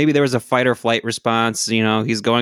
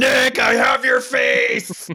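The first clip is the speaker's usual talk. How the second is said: put-on very high, overeager yell, stretched out slowly; 13 semitones higher than usual. Retelling a fan in the back yelling at a celebrity: imitating someone yelling. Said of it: "some guy was in the back yelling".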